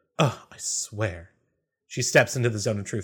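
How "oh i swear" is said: huffing a little, exasperated and put out. Narrating a scene, voicing Gertie as she is asked to step forward: huffing a little. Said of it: "she huffs a little bit and goes".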